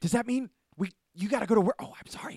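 acted shrill, booming, very high, very loud excitement. Retelling how a man reacts when the bat signal goes off, imitating excited speech. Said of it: "he gets like really excited".

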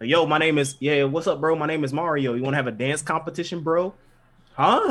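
relaxed, chill American bro-style accent.

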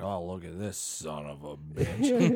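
put-on angry grandpa voice, slow, swooping, fuming outburst. Retelling a grandpa driving, imitating an angry grandpa. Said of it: "he gets all, like, fucking angry".

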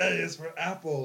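put-on four-year-old little-kid voice. Retelling what they said to mom as a four-year-old: imitating own deeper child voice. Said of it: "my voice was deeper as a four-year-old".

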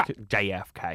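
put-on English accent shifting into Southern accent. Quoting a show character during a discussion of it: Bill impression. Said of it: "I wish I did Bill as good as you could do it".

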